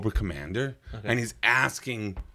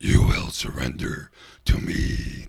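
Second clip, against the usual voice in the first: menacing, threatening cartoon villain voice; 8 semitones lower, 4 dB louder than usual. Recalling a cartoon villain voice they were a fan of, Dr. Claw voice. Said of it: "Claw always had that".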